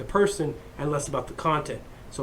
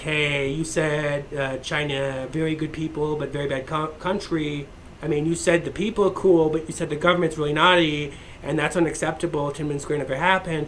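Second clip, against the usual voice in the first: normal talking voice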